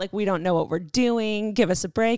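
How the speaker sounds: plain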